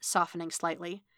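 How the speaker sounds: plain reading voice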